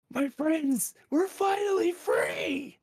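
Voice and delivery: very high, slow, drawn-out shout. Voicing a freed captive calling to friends across the room: yelling. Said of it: "you hear this thing yell".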